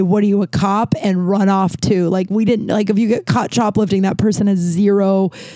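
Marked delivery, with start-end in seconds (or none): none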